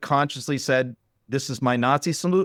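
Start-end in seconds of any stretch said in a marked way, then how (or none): none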